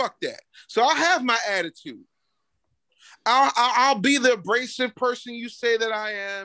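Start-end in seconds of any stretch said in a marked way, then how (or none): none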